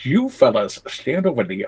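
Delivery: mock Southern movie-style accent. Asked to let them hear your southern accent, you oblige with a mock southern accent, Michael Gambon character. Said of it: "let's hear your southern accent".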